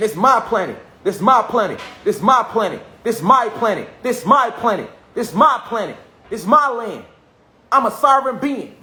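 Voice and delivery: high, forceful, heartfelt, fully meant repeated affirmation. Showing how to say an affirmation: said with feeling, meaning it. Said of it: "when you saying that with feeling and you mean it".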